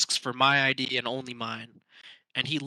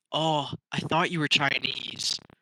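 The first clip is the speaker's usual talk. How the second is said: acted deeply disappointed tone. Retelling how a man handed back their id, mimicking a deeply disappointed voice. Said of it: "in the most disappointed voice ever".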